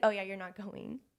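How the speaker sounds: normal talking voice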